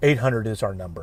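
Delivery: announcer voice stepping downward at phrase ends. Giving out a number in best radio voice, falling radio voice. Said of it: "saying it in a downward reflection ... I'll try to do this in my best radio voice".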